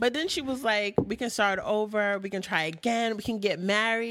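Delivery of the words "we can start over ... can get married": ordinary delivery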